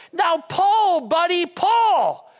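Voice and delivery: very slow, loud, high, drawn-out, full-throated holler. Telling a story about a horse pulling a car from a ditch, retelling a loud shout. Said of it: "in the loudest voice he can".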